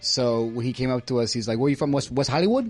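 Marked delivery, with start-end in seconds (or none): 1.6-2.7 heavy, thick, laid-on put-on Spanish accent. Retelling what a ring announcer asked: imitating a thick Spanish accent. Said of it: "who had a very thick, you know, Spanish accent".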